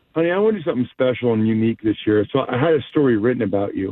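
very low, sultry, sexy, sensual voice. Advising listeners what to say while she opens the gift, sultry voice. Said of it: "That was sultry".

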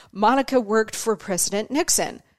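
ordinary talk, nothing marked

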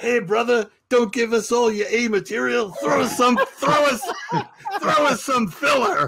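top-of-the-lungs heckling yell, very high. Retelling a heckle that Martling shouted across a quiet room: imitating a loud yell. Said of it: "he yells out the top of his lungs".

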